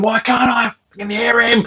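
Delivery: mock shrill screaming outburst. Retelling being unable to hear the other caller: imitating someone screaming. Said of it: "while I'm screaming at the screen".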